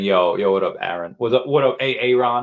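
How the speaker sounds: normal talking voice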